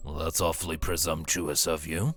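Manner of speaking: rough, gruff delivery. Narrating a game scene, voicing Fenrir from off the side of the airship, gruff voice. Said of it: "you hear a gruff voice".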